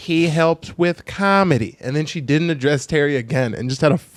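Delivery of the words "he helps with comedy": put-on choppy delivery, pausing after each word, higher. Imitating a comedian introducing her dog on stage, pausing after every word. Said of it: "every word had a comma kind of".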